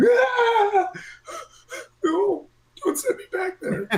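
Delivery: very high shriek, "ah" stretched long. The game master voices Puck being summoned back, screaming. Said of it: "he's just screaming".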